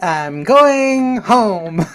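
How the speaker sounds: very high, slow, swooping cartoon-boy accent. Joining in on a co-host's quote, imitating a cartoon boy's accent. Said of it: "better than mine".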